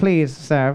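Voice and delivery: put-on despairing robot voice. Voicing the robot maid Irona pleading with her owner: Irona voice, mock despair. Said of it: "And she's like".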